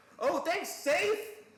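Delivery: very high, loud, sarcastic tone.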